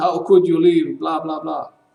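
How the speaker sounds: put-on screaming voice. Retelling how someone came down to scream at the speaker: imitating someone screaming. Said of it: "he was screaming".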